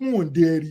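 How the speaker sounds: crazy, goofy cartoon giant character voice. Retelling how a man talked, doing his crazy cartoon giant voice. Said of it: "he got the crazy voice".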